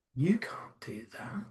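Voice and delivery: very hushed, sultry, seductive murmur. Speaker illustrating how the most attractive person might say it, sultry. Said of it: "saying to you in a sultry way".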